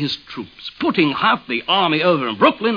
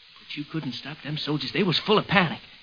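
usual speaking voice

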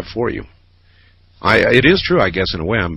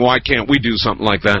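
plain

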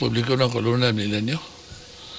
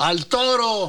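high yelled call like a crowd. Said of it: "le gritan".

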